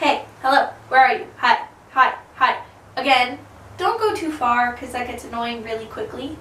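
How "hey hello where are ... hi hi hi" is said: normal talking voice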